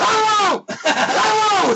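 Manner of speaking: mock very high, screamed calls. Describing a tv character alone in the dark at his computer, reenacting a scream. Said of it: "He's screaming at his computer".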